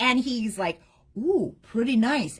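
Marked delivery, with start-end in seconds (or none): 1.2-2.4 mock restrained, reserved, understated enthusiasm. Imitating a coworker who hides how much he likes a sample: imitating holding back enthusiasm. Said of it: "he tries to hold back the enthusiasm 'cause he's British".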